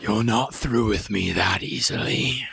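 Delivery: very low, deep, otherworldly monster voice. Game narrator voicing the creature the players are slicing at: the creature's voice. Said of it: "a voice now spoken into the room".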